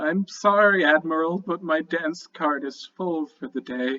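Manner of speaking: sounding delirious. Character replying to an admiral's welcome to the team, delirious voice. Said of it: "he looks very delirious and he's like".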